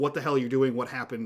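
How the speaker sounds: ordinary delivery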